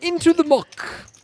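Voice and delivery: haughty English gentleman voice, very high and loud. Repeating a poker catchphrase when asked how it should sound: righteous Englishman voice. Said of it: "like a, uh, righteous Englishman".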